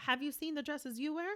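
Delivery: polite professional tone. Retelling a reply to a woman who objected to being touched, mock-professional tone. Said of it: "in my most professional tone".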